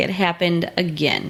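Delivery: ordinary talk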